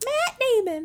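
very high, tiny little voice. Saying a name playfully while chatting with others: tiny voice. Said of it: "I like that tiny voice".

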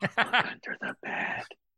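playful whisper. Joking on arriving as a guest, wanting to whisper: playful whisper. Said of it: "all I wanna do is sit here and whisper".

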